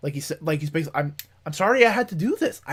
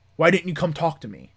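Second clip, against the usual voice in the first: put-on, mock-furious, very angry man's voice. Speaker retells a man confronting someone at a door: imitating a very angry man. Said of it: "Very very angry".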